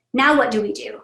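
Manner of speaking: ordinary talk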